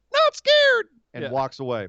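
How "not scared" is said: put-on very high, loud, boyish schoolboy voice. Retelling a wrestling segment, quoting the line in a high-pitched schoolboy voice. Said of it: "Brock voice".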